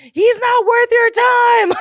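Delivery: very high, loud screaming. Retelling riding a ride while yelling advice at her, retelling screaming. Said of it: "Like I'm screaming at her".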